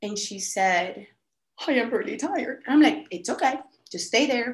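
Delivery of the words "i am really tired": put-on cracking, faltering voice breaking up. Quoting Caroline after the speaker urges her on, imitating a breaking voice. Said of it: "I just hear her voice breaking up".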